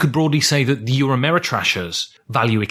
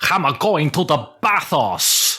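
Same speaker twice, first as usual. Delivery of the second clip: jokey, exaggerated, put-on Greek accent; 3 semitones higher than usual. Bantering with another speaker, say it in a greek accent. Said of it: "that was my Greek accent, love".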